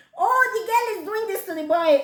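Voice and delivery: mock high, fast, excited crowd shouting.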